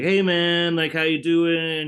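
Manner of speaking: mock cheery, friendly, jolly voice, very high, loud. Recounting a friend's surprise FaceTime call, imitating his jolly greeting. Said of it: "he's a very jolly guy".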